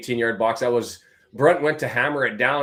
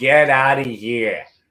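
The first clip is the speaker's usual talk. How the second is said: very slow, loud, put-on Massachusetts accent; 6 dB louder than usual. Calling a match play-by-play and quoting a player, in a Massachusetts accent. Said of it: "How's that for my Massachusetts accent?".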